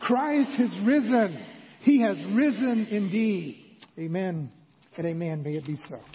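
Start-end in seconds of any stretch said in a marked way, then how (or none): 0.0-3.6 loud, wholehearted, truly meant delivery. Leading a call-and-response line after asking to say it: said like you mean it. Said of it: "Now say it like you mean it".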